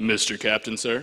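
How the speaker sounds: very deep, low-pitched, dropped voice. Retelling asking the ferry boat captain something: deep voice, imitating own past words. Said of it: "I wish my voice was that deep".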